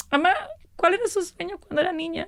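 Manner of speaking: high, tearful voice cracking with crying. Retelling asking her mother about her childhood dream, crying while talking. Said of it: "I can't believe I'm crying again".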